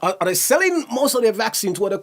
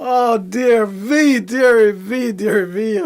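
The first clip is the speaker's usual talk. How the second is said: laughing and giggling through the words; 4 dB louder than usual. Joking about a weird position on a video, laughing while talking. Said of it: "I better stop laughing".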